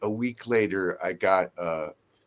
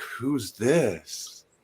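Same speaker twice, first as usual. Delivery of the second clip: put-on fully engaged, keenly interested, curious tone; 4 semitones higher than usual. Retelling a phone call answered by Ann: imitating someone sounding completely interested. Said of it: "just, like, completely interested".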